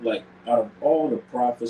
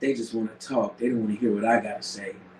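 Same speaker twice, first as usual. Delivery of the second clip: normal talking voice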